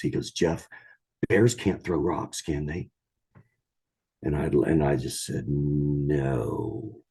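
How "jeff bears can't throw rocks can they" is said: mock trembling, shaky voice that keeps cracking. Retelling what a companion asked after they had seen bears, imitating a cracking, shaky voice. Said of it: "in a really cracking, shaky voice".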